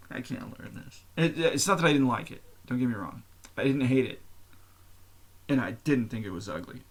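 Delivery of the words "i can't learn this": frustrated grumbling in a whisper. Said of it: "I was like".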